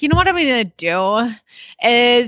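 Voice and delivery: put-on California valley girl way of talking. Retelling what a woman said when she came to get the horse, Valley girl voice. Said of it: "she does talk like this".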